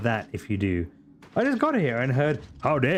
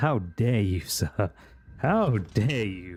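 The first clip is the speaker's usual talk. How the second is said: low, put-on Irish brogue; 4 semitones lower than usual. Player addressing a defeated opponent in a game, in an Irish accent. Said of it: "I never say with an Irish accent".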